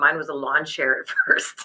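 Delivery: low voice, laughing through the words. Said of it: "Sorry, I'm laughing".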